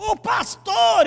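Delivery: loud, slow, drawn-out shout.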